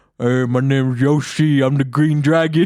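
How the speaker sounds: really poor, cartoonish voiceover-style delivery. Speaker retelling an edited Yoshi clip, bad Yoshi voiceover. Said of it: "It's like a really poor voiceover".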